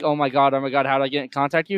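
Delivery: put-on panicked, pleading man's voice. Retelling a drunk man's reaction to a prank call: imitating a man panicking. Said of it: "having a panic".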